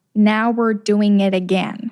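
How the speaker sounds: very slow, deliberate, each word drawn out. Recalling a line from a self-tape for viewers, saying it very slowly. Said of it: "I think I'll say it very slowly".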